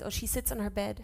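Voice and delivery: ordinary talk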